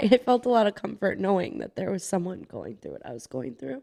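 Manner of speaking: tearful, choked up, wavering pitch, near crying. Speaker recalling with a friend how they first connected, choking up, about to cry. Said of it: "sorry, I'm going to cry".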